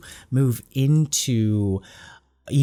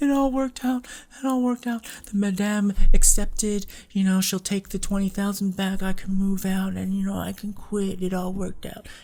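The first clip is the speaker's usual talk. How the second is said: put-on weepy crying, very high pitched; 9 semitones higher than usual. Retelling how she put on a sob story: imitating fake crying. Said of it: "she's crying".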